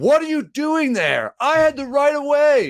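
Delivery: shrill, high-pitched, yelling delivery. Retelling a scooter crash, as the woman from the car yells at them: imitating a woman yelling. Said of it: "she's just like yelling at me".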